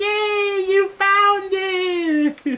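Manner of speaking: put-on very high, slow, drawn-out little kid cheering voice. After finishing a room in the game, cheering it like a little kid. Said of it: "as if we were like a little kid".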